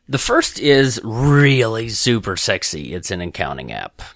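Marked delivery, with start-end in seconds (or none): 0.1-2.9 sarcastic, tongue-in-cheek slow drawl. Sharing business tools with listeners on a coaching call, sarcastic. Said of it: "So hopefully you got my sarcasm there".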